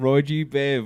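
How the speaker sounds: put-on British accent. Repeating roy g biv as a joke: british accent. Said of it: "Why are we doing a British accent?".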